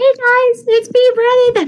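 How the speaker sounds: very high, little squeaky voice. Acting out a clip of young Brennan: squeaky voice Brennan. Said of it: "like squeaky voice Brennan? You're like".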